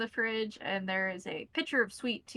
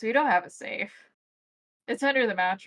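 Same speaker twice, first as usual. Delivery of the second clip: put-on louder, chuckling old gentleman voice. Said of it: "chuckles and goes".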